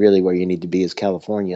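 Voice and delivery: ordinary talk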